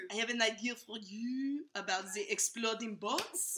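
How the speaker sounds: terrible, bad French accent. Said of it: "with a terrible French accent".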